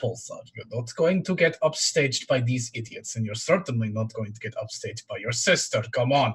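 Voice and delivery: muttering quietly to oneself. A game master voices a character speaking to Pulsar: muttered under breath. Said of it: "say that under his breath".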